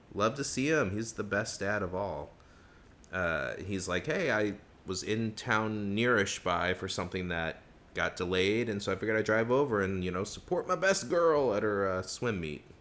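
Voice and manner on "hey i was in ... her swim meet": ordinary talk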